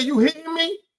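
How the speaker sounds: very high-pitched, indignant, accusing woman's voice. Retelling what the woman said as he reached over: imitating a woman in a car. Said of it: "She said".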